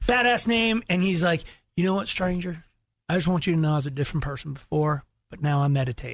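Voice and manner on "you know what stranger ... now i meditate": casual, put-on North Carolina accent. Retelling what a man at the bar said: imitating a North Carolina accent. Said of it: "he just starts talking to me with this accent".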